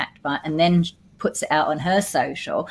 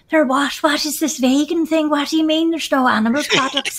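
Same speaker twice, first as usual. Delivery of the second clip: rough, very high put-on Irish accent; 10 semitones higher, 3 dB louder than usual. Retelling what a new part-time worker said, in a put-on irish accent. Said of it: "that's probably not my best Irish accent".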